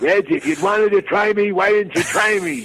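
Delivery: mock heated, riled-up, worked-up angry outburst. Retelling how the father answered the caller: imitating a worked-up dad. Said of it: "he got so worked up".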